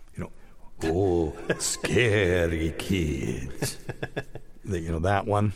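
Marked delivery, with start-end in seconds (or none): 0.8-3.8 cliché, fake, put-on Eastern European accent. Describing a podcast promo he voiced, the speaker does a fake Eastern European accent. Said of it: "that typical Eastern European fake accent".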